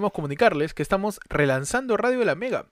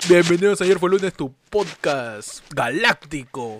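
put-on deep masked villain voice. Welcoming listeners to the podcast's fourth season: Darth Vader voice. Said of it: "Con la voz de Darth Vader".

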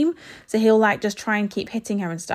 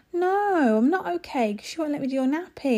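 put-on sad voice, much higher pitch; 7 semitones higher than usual. A mother retelling what she told her little son at nappy time, put-on sad voice. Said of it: "had a dislike voice on".

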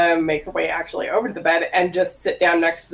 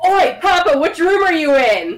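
very high, loud, projected calling yell; 10 semitones higher, 5 dB louder than usual. In a game, a character stands in a hallway of closed doors, yelling out. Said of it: "cup her hands over her mouth, and just yell out".

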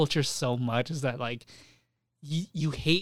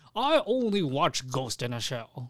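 put-on very slow, very drawn-out old man voice. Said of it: "What the hell was that?".

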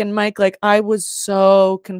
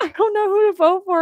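play-acted crying, speaking through tears, very high; 12 semitones higher than usual. Retelling telling Jeff privately about a hard vote: retelling own tearful words. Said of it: "and I'm crying".

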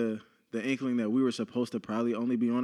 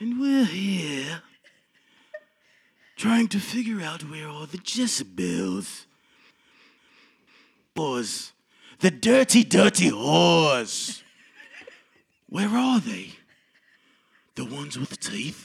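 put-on smooth British voice, higher and louder; 5 semitones higher, 5 dB louder than usual. Opening the episode in an Idris Elba impersonation. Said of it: "that was my Idris Elba, uh, impersonation".

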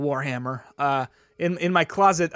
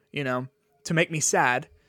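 normal talking voice

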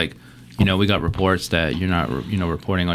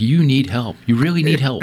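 put-on, loud, high-pitched yelling; 7 semitones higher, 5 dB louder than usual. Retelling a man yelling at his kid through car speakers, retelling a man yelling. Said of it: "he's like yelling at his kid".

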